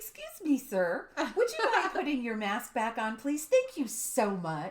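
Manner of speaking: sweetest, most polite syrupy voice. Retelling what she said to a man on her way back, retelling her put-on sweetest voice. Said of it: "with my sweetest voice say".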